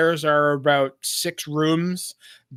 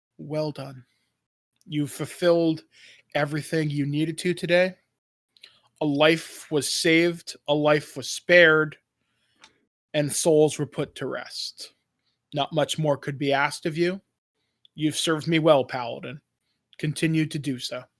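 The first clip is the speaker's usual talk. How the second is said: soft, gentle woman's voice; 3 dB quieter than usual. Voicing a voice in the paladin's head after a temple offering: gentle woman's voice. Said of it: "just a gentle voice. It's a woman's voice saying".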